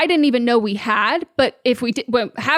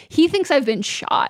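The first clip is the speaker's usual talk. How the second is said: usual speaking voice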